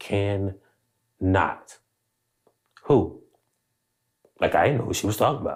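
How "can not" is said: can. not. said as two separate words. Retelling how she enunciated cannot, pause between can and not. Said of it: "she enunciated the two words, separating them into isolated sentences".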